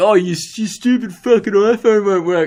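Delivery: mocking voice. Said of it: "I don't know why I was mocking him".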